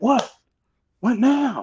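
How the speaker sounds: an animated, energetic outburst. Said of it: "we get all a little more animated with it".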